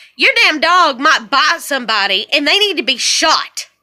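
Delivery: plain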